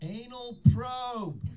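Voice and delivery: mock piercing, very high, clear shout. Retelling how a guy in the audience yelled during a guitar solo, retelling his yell. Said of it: "very clearly this guy yells at me".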